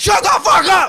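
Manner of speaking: put-on angry yell. Retelling another person yelling back: imitating someone yelling. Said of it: "some other person just like".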